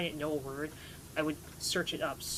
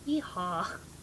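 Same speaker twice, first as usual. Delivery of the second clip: put-on Southern accent; 2 semitones higher than usual. Asked to do a Southern accent, managing only yeehaw; put-on Southern accent. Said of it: "that's my Southern accent".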